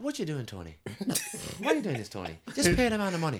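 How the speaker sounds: put-on high, sing-song Irish accent. Retelling a story about a man and his wife in the rain, Irish accent. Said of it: "I'm enjoying his Irish accent".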